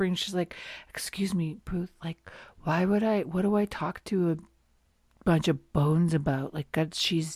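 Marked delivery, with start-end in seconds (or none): 0.9-6.5 mock, acted-out whisper. Retelling how a woman leans over to a man, imitating someone whispering. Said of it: "she leans over and she's like whispering".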